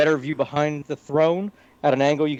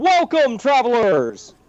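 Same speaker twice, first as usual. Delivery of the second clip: big booming, swooping loud call; 9 semitones higher, 4 dB louder than usual. Game master voicing an unseen greeting after the players knock: booming voice. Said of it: "You hear a booming".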